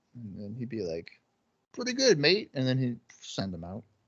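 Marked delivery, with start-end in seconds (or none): 1.7-2.5 very high-pitched, put-on British accent. Imagining a wrestler answering in a put-on British accent: Shark Boy's put-on British accent. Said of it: "how's your British accent?".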